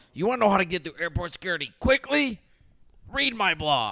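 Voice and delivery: very loud, angry shouting. Mocking an airport-security life hack while another speaker explains it: mock-angry yelling. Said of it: "Stop yelling".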